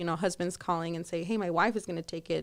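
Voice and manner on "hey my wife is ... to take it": plain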